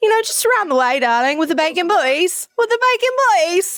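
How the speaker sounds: put-on British accent. Retelling keeping up a British act when asked where they're from, fake British accent. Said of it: "Now I have to like be British".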